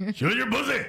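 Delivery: creepy voice, called out very high. Retelling a creepy pickup line from earlier: imitating own creepy Macho Man Randy Savage voice. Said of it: "you did it in a really creepy way".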